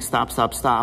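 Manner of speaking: plain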